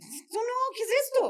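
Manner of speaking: high, bewildered exclamation.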